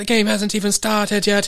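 very high-pitched British commentator-style announcer voice. Retelling a soccer riot video's commentary in a British announcer voice. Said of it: "they get some British, like, announcer. He's like".

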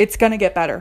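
put-on plain, no-nonsense, firm, assertive delivery. Repeating what she said, imitating a firm, assertive tone. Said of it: "in this very straightforward, assertive way".

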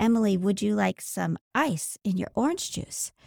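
mock gentle, caring, sweet, loving tone. Retelling how her husband Chad offered her ice, mock loving, sweet tone. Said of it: "in a very loving, caring, sweet way".

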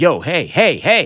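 loud, drawn-out yell. Retelling calling out to an older hunter aiming a rifle scope: retelling own past yelling. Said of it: "And I start yelling at him".

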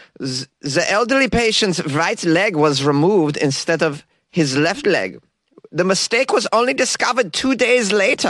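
clumsy, terrible put-on Austrian accent. Reading a news story out of Austria, the host uses a terrible Austrian accent. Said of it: "you're going to get a terrible accent".

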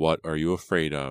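ordinary delivery

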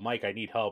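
ordinary talk, nothing marked

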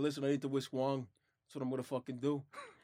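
soft, everyday New Yorker accent. Redoing the whisk line for the others, in a New York accent. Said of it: "I can do it like a New Yorker".

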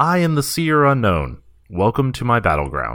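grand, high-pitched announcer voice. Narrating a game session, voicing the Seer Unknown as it booms out. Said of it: "a voice booms out".

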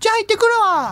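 put-on very high, clearly enunciated baby-talk voice. Showing how the baby talks in baby language: crisp baby voice. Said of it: "そうそう、そのぐらいの感じで".

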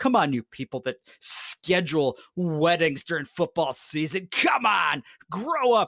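put-on exasperated ranting.

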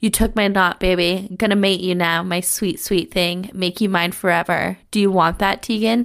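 ordinary talk

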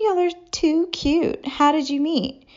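giggly, very high-pitched chirping gush. Tracy, one of the blondes, addresses the narrator and her partner: giggling. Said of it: "giggled and said".

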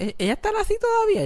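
very high, squeaky, wide-ranging wondering voice.

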